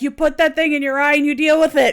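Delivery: loud, tough, encouraging yelling. Imagining a character yelling a pep talk at another: imitating Steve yelling. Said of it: "Steve's over there yelling at her".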